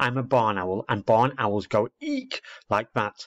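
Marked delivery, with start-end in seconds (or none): none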